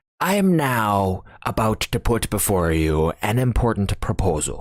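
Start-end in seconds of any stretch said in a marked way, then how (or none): none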